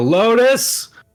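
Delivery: very high, loud yell. A player's character looks up to the sky calling for his sister: Dolus yelling. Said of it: "just yell".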